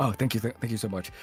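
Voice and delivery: mock humble, polite, deferential tone. Retelling how the actors thank fans afterwards: imitating japanese politeness. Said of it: "the Japanese, like, politeness of".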